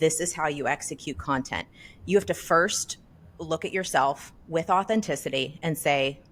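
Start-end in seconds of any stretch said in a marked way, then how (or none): none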